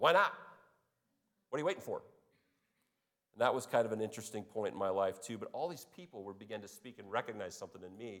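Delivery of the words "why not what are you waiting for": gruff, brusque, blunt, rapid delivery. Recounting a man from South Dakota questioning him: imitating Kurt Strand's gruffness. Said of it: "and he's kind of gruff".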